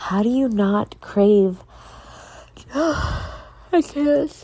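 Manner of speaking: talking through a yawn. On a podcast about cravings, the speaker answers a common question while yawning. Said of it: "I'm yawning. I'm sorry".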